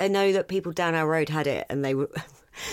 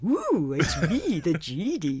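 very slow, drawn-out genie voice with swooping pitch. Imitating how the genie sounds in the sequel: Homer Simpson voice. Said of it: "that's just the voice of Homer Simpson".

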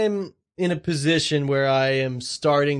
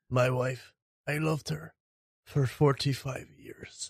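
put-on Irish-accented voice, quieter; 7 dB quieter than usual. Doing an impression when asked for Colin Farrell: Colin Farrell impression. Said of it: "What about Colin Farrell?".

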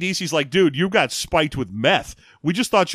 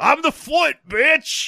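acted, very high, drawn-out, strange yell; 11 semitones higher than usual. Quoting a character who shows up after the victory: imitating a weird yell. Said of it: "he yells, uh, weirdly".

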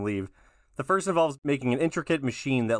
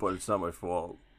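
just-woke-up, fresh-out-of-bed morning voice; 6 semitones lower, 6 dB quieter than usual. Joking about fighting sleep, imitating own morning voice. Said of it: "that's my morning voice right there".

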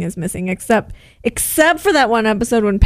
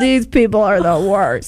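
plain

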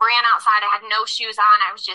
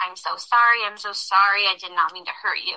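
mock tearful, frantic, sobbing, freaking out; 2 semitones lower, 3 dB quieter than usual. Retelling how a man fell to his knees apologizing: imitating someone crying. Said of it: "he started crying and he was like".

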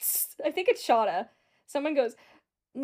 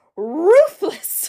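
very loud, high-pitched cartoonish holler; 6 semitones higher, 15 dB louder than usual. Retelling how someone yelled a word: imitating a cartoonish yell. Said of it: "yells this as if he's, like, Yogi Bear or some type of Looney Tune".

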